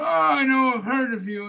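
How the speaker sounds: put-on thick, heavily laid-on Greek accent, pitched high. Retelling a phone call from a man asking for Edith, Mr. Arionostis's heavy Greek accent. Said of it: "he had a very heavy duty Greek accent".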